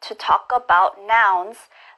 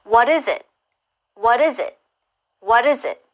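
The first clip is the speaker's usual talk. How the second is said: quick, rapid speech with words blurred into one; 2 semitones higher than usual. Drilling English learners, repeating the question three times, fast. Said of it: "let's try it faster three times".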